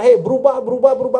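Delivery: loud, insistent high voice.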